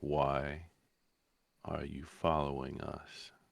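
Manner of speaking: dry, flat, expressionless deadpan delivery. Voicing a character who questions the party in a roleplay scene: deadpan. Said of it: "Sal just deadpans".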